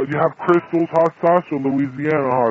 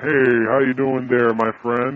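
put-on deep, low male voice. Prank caller greets the person answering the phone, fake deep man voice. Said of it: "We're using the deep voice".

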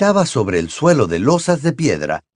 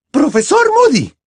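very high, loud, appalled and horrified outcry; 5 dB louder than usual. Narrator reading Professor McGonagall calling out to Professor Moody, exclaiming in horror. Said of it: "exclamó una voz horrorizada".

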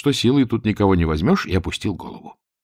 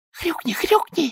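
very high, piping, urging little whisper; 3 dB quieter than usual. A young pig nudges the listener with her elbow, urging him: whispered. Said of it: "зашептала молоденькая свинка".

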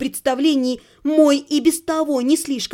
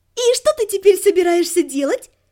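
playful, teasing, light tone, pitched up; 5 semitones higher than usual. A woman asking the narrator a question, playful. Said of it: "игриво спросила Марика".

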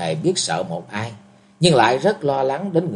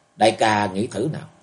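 ordinary delivery

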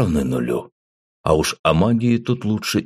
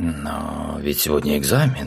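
hesitant, not confident, with a drawn-out Но; 3 semitones lower than usual. Reading a story aloud, the girl walking beside the narrator replies, not very confidently. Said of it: "не очень уверенно произнесла девушка".

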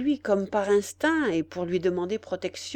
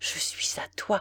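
weak, faint, barely voiced whispered murmur; 5 dB quieter than usual. Held in Ordener's embrace, she answers him, faint murmur. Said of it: "murmura-t-elle faiblement".

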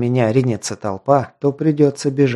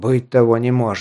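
plain

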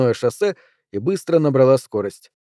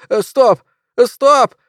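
shrill, very high, startled squeal; 9 semitones higher, 5 dB louder than usual. Uncle Vernon squeals at Mary while she drives: squealing. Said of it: "взвизгнул он".

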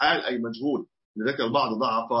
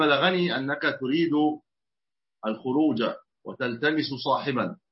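usual speaking voice

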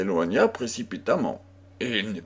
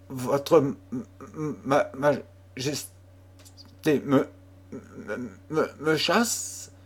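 stammering, slower pace; 4 semitones higher than usual. A young girl, dismissed by the Queen of Navarre, answers her, stammered. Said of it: "Bégaya la jeune fille".

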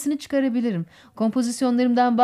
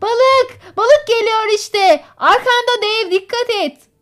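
urgent, alarmed cry, high and loud; 9 semitones higher, 6 dB louder than usual. Narrator reads young Tom calling out about the fish from the boat, shouted. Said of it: "diye bağırdı genç Tom".

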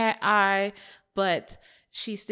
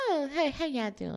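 very soft, high, sweet put-on voice; 7 semitones higher, 4 dB quieter than usual. Describing a woman's voice by imitating it: soft put-on voice imitating her. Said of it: "In a real soft and kind of".

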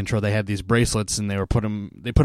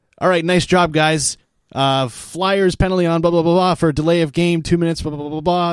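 loud, pitched-up, irritated put-on arena announcer voice; 7 semitones higher, 5 dB louder than usual. Retelling how the team's pa announcer called the fans' penalty: imitating a pissed-off pa announcer. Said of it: "he's just so pissed off".

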